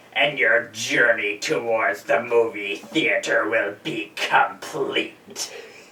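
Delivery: dropped low in pitch and kept soft. Closing a video for the people watching, with an Emperor Palpatine impression. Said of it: "I've been [name] doing an impression".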